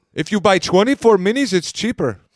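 fake British Indian street accent. Speaker showing another accent they do, a british indian street accent. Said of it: "the other British Indian street, accent".

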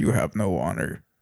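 put-on flat, emotionless voice, sounding uncaring. Imitating how the anime made Yasuke sound: imitating Yasuke's flat, uncaring delivery. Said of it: "They made him sound like he just didn't care".

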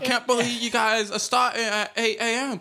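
put-on fantasy-game villager accent. Retelling a woman scolding construction workers, imitating her accent. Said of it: "But it was all in the accent".

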